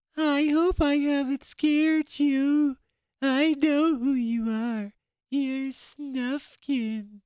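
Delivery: very high, tiny, little mouse voice. Reading a story aloud, giving the creep's words in a tiny voice. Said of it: "do a tiny voice".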